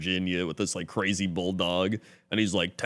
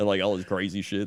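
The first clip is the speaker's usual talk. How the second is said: plain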